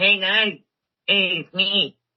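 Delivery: exaggerated put-on Mexican accent, very high, slow, drawn out. Imitating a basketball player's voice to the others: Cat impression, bad Mexican accent. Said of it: "He sounds like".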